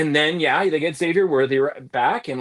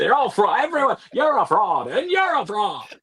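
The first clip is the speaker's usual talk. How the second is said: high character voice, pitch swooping up and down; 6 semitones higher than usual. Calling every team a fraud: Jimmy Stewart voice. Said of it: "I went to a, a Jimmy Stewart voice there".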